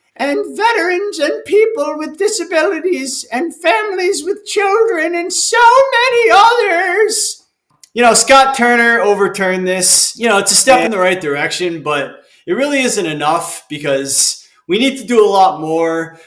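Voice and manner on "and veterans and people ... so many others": very high, put-on granny voice, pitched way up. Quoting a senator's statement aloud: Granny Warren accent. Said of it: "I'm trying to do my Granny Warren accent".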